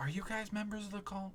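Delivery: hushed, very quiet, barely there half-whisper. A game character questions the party members; half-whispering. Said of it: "Like he's whispering to you guys".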